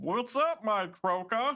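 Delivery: badly done frog puppet voice, high and slow. Joking about Croaker slurs, greeting in a bad Kermit voice. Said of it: "I can't do a Kermit voice".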